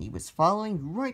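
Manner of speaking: ordinary delivery, nothing marked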